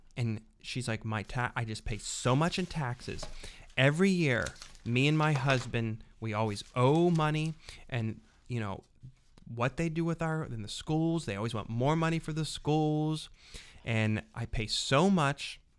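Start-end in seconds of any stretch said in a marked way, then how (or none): none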